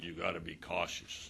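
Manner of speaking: deep, quiet voice. Retelling what he said before their first practice, doing a deep voice impression. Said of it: "in that deep voice".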